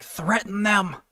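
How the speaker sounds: high-pitched half-whisper under the breath. Recapping a story, acting out Morty half-whispering to Rick: retelling Morty's half-whisper. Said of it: "Morty whispers to Rick like".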